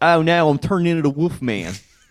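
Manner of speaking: put-on loud, high, belted Philadelphia accent. Recalling a Halloween tweet about the Wolf Man from Philly; Wolf Man in Philly accent. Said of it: "the Philadelphia accent".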